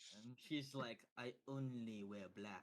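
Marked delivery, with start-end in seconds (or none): 1.2-2.6 put-on French accent. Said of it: "I don't know why she talks like that".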